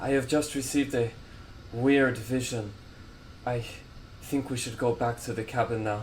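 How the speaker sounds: breathless high npc voice. Game master voicing a character who has just run in, breathless Erland. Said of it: "a breathless Erland enters the room".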